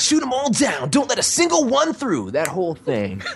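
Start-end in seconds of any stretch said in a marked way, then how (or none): 0.0-2.3 very high, swooping, aggressive, amped-up tone. Voice actor showing a character line he voiced: aggressive, amped-up character voice. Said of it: "kind of a more aggressive, really amped up version of that".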